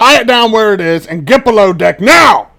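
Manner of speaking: very loud, high-pitched, barked shout. Voicing the captain ordering the crew below deck: captain yelling orders. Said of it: "he yells back".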